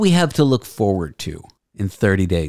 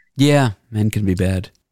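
plain

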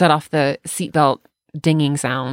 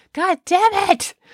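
mock, very high, shrill shrieking scream. Retelling yelling at the car over a seatbelt alarm: imitating own screaming. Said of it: "screaming at the car".

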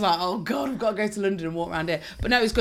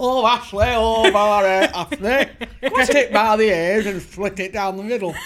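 big, northern-sounding man's voice; 7 dB louder than usual. On a podcast, acting out a remembered exchange, in Uncle Fred voice. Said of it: "He talked like this".

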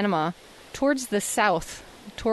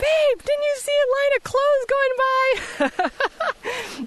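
acted, very high, long drawn-out yell. Retelling calling out to her husband about clothes going into the ocean, retelling a yell. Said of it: "I yelled out to my husband".

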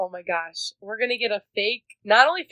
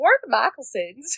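put-on Southern accent, higher; 4 semitones higher than usual. Retelling how a book character poses undercover: imitating a fake Southern accent. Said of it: "fakes a Southern accent".

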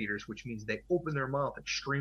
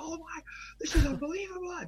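very high, mock astonished, amazed scream. Telling of huge sharks around the boat, retelling the captain screaming. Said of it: "He was literally screaming".

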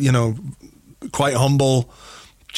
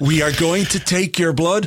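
plain, careful English, word by word; 4 semitones higher than usual. Retelling the doctor speaking to another player: imitating very slow, deliberate English. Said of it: "he speaks very, very slowly".

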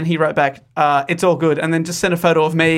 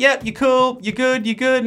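laid-back, unbothered, calm casual tone; 7 semitones higher than usual. Retelling directions from the beach house owner: imitating Tom's calm casual voice. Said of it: "he's the most calm, casual dude ever".

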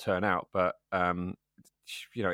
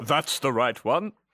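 raised, pitched-up announcer voice; 5 semitones higher, 6 dB louder than usual. A player confirms the right answer, told he sounds like a 90s VHS board game. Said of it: "You sound like a VHS board game from back in the 90s".

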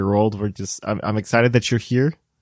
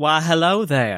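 mock Southern belle accent, pitched higher; 5 semitones higher than usual. Greeting after being introduced as the Southern Belle: put-on Southern belle voice. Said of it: "the Southern Belle of Puckle".

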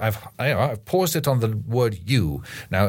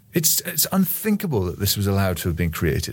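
ordinary talk, nothing marked

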